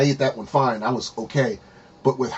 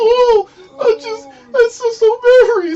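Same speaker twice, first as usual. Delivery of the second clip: put-on drawn-out weepy bawling, very high and slow; 6 dB louder than usual. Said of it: "She's doing the same thing there".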